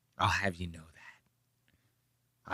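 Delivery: mocking deep, breathy voice. Retelling what a debater said in a clip: imitating Nick's deep wispy voice. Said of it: "that little deep, like, wispy thing with his voice".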